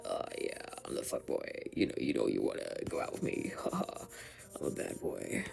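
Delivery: whispered, breathy, creaky vocal fry. Showing off the scratchy quality of his voice, using vocal fry. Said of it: "the vocal fry".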